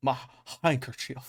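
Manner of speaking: American Southern accent on "handkerchief". Showing how a southern guy would say the word: southern accent. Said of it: "how would a southern guy say it?".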